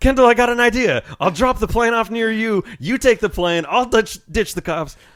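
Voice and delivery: loud shout. Retelling a game moment when a friend stopped responding: imitating yelling a name. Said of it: "I start yelling into the mic".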